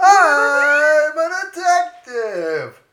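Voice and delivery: very high, comic delivery with stretched-out "I'm". Repeating a line while trying impressions: Jerry Seinfeld impression. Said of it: "about to do a Jerry, Jerry Seinfeld there".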